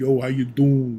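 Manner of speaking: put-on light New York accent. Showing how talking with New York friends brings the accent back: New York accent. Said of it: "my New York sound back a little bit".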